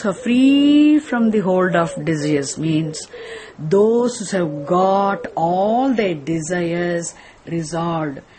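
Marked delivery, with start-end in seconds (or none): 3.6-8.2 very slow, drawn-out, every word stretched. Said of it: "Are you wondering why I'm talking so very, very slowly".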